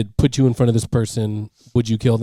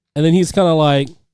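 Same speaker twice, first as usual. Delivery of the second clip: normal talking voice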